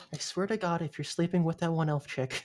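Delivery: close, hushed half-whisper. Character hugging the listener's character, then half-whispering in their ear. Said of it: "she whispers in your ear".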